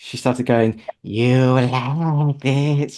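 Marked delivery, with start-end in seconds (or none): 1.0-3.0 creepy witch voice, words drawn out. Retelling what a guest said on her hypnotherapy session recording, imitating a witch voice. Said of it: "talking like a witch".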